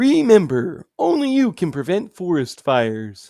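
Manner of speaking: goofy, high cartoon moose voice, swinging pitch. Reading a line aloud for the others, in a Bullwinkle voice. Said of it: "I don't know why I went Bullwinkle".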